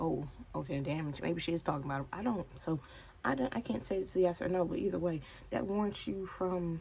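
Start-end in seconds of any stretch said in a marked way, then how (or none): none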